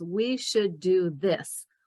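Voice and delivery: slow, firm, confident falling tone. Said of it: "you make statements".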